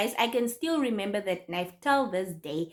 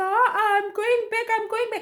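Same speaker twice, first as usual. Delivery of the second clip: mock crying, very high-pitched and tearful; 11 semitones higher than usual. Retelling arriving at a friend's gate after a robbery: imitating herself crying. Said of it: "And I'm crying and I'm there".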